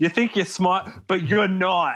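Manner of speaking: put-on thick, laid-on Boston accent. Quoting Trish yelling at Cassie, in Trish's thick Boston accent. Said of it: "This very thick Bostonian accent".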